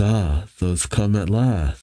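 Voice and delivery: ordinary talk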